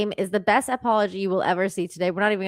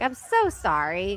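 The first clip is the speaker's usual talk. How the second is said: mortified, embarrassed, heartfelt and very sorry tone; 4 dB quieter than usual. Retelling how a boy apologized after the ball hit a girl: imitating an embarrassed apology. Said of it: "He's so embarrassed".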